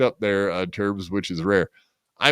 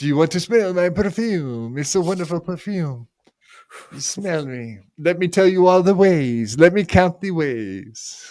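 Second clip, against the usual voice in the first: bad put-on cartoon character voice, higher; 7 semitones higher than usual. Doing a bad impression for the others: bad Pepe Le Pew voice. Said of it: "Does that sound like my fucking Pepe Le Pew?".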